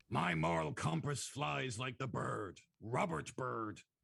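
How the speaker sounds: put-on slow, creaky old man voice. Joking about a politician's moral compass: put-on old man voice. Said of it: "That's every old man voice".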